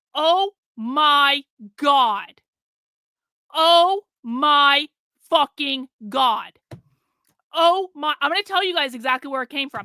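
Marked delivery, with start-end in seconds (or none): 0.2-8.2 seething, furious, very slow, drawn-out outraged disbelief. Realizing someone cropped them out of their footage, furious. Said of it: "I'm so pissed right now".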